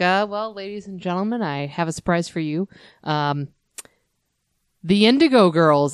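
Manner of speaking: mock bone-dry, deadpan announcer voice. Retelling a comedian's stage bit: imitating a deadpan comedian. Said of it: "she is so deadpan".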